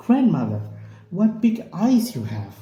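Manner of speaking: very sweet, high, lilting sing-song voice. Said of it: "you can make the voice very sweet".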